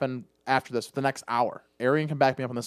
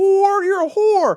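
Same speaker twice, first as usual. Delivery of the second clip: very high, shrill, loud, drawn-out screamed yell; 7 dB louder than usual. Recounting a woman yelling at another from the couch; retelling a yell. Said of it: "she's yelling".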